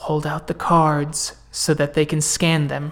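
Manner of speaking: low-key, hushed, soft-spoken, under the breath. Voicing a character who tells the group to show cards: half-whispering quietly. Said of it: "whispers quietly".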